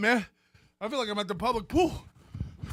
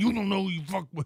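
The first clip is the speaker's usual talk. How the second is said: put-on angry voice through gritted teeth. Predicting what the man in the video will say: imitating Joey through gritted teeth. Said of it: "he'll be gritting his teeth going".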